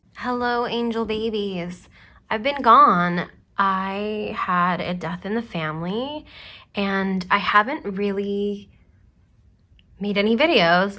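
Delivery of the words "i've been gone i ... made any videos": getting emotional mid-sentence, lingering on I. Video creator greets viewers after time away: getting emotional. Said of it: "I'm getting emotional".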